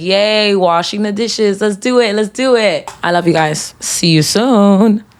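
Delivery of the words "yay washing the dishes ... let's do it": excited yay cheering with clapping along. Showing how to cheer yourself on for chores: cheering oneself on. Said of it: "start clapping and be like, "Yay,"".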